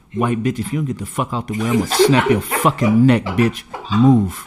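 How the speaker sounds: put-on passive-aggressive whisper. Acting out going up to someone: acting out a whispered threat. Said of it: "they whisper passive aggressive shit".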